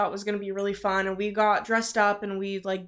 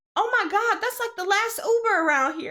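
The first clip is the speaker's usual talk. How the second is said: mock woman's country twang, higher pitch; 12 semitones higher than usual. Retelling what a lady said about the last uber: imitating a woman with a country accent. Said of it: "a little country accent".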